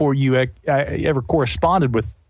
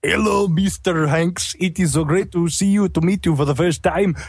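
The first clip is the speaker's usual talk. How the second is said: terrible, clearly fake put-on Mexican accent; 3 semitones higher than usual. Retelling a man reading to the speaker off a napkin: bad Mexican accent. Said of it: "Could be the worst Mexican".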